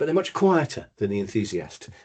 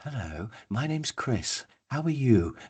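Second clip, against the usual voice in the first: gentle, soft, slow, unhurried, easygoing amiable voice; 5 dB quieter than usual. Describing personality types, voicing an amiable person answering the phone, soft voice. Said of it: "they have like a soft voice".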